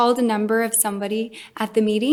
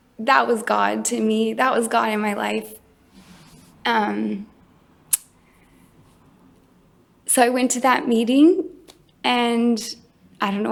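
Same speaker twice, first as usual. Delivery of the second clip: teary, welling-up voice close to crying. Recounting a father's reply and going to a meeting, the speaker gets teary. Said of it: "I'm getting all teary".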